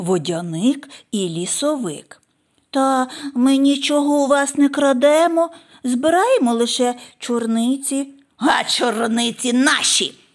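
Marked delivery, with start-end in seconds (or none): 8.4-10.1 barked, sharp, slower. Yaga answers those picking blueberries in the forest, barking. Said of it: "гаркнула".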